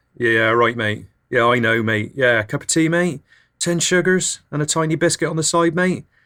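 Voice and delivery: put-on West Country accent. Showing the voice you adopt when Builderman or Gasman talks to you, a put-on West Country voice. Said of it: "I tend to opt for more of a West Country voice like this".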